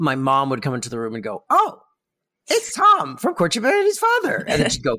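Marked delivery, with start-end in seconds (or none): 1.5-4.4 very high-pitched woman's voice. Recalling mom walking in while they watched the Incredible Hulk, impression of their mom. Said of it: "your impression of your mom is like Jay Leno, just a little higher".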